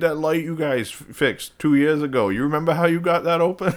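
put-on Down East Maine accent, a bit high. Imitating another speaker asking about a light: imitating a Maine accent. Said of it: "you gotta get the Mainer accent".

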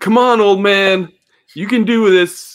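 loud, slow, shouted encouragement.

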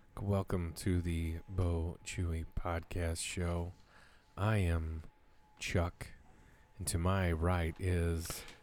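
low, hushed, eerie spooky voice. Podcast host opening a spooky episode and introducing co-hosts, spooky voice. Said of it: "You sounded kind of spooky".

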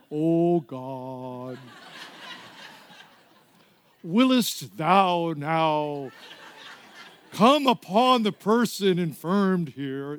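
very slow put-on Shakespearean old-English stage voice. Recalling changing her voice and intonation, doing a mock-Shakespearean voice. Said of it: "I changed my voice and intonation".

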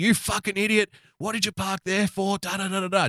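mock angry, furious, screamed scolding tone. Picturing a wife scolding her husband in a busy mall: imitating a wife screaming. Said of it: "your wife screaming at you".

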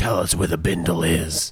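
low, eerie, ghostly, haunting voice. Speaker on a game stream decides to speak in a haunting voice. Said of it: "can I just speak in a haunting voice?".

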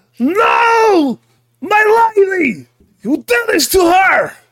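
furious, high-pitched cry. Narrating a tabletop game as Maxime's lady is killed, Maxime's enraged cry. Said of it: "And he seems enraged".

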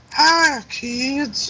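put-on very high, squeaky, creepy old man voice. Comparing Joe Biden to the old man from Family Guy: creepy squeaky old-man voice. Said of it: "that creepy pedophile with that squeaky".

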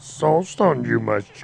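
wise little alien voice. Asked if anyone has a Yoda impression, trying one in a Yoda voice. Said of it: "You got a Yoda impression under your belt?".

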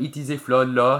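English spoken with a put-on French accent. Imagining speaking to France as a person: put-on French accent. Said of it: "I always speak to him in a French accent in English".

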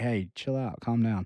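ordinary talk, nothing marked

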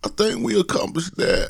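very high, rough, creaky DJ announcer voice. Looking back on the year's goals, in DJ Drummer voice. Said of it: "In my D J Drummer voice".

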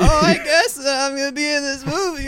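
very high celebrity voice. Acting out an actor arriving at an audition: Bobcat Goldthwait impression. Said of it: "That was a pretty good Bobcat Goldthwait".

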